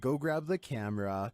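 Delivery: ordinary delivery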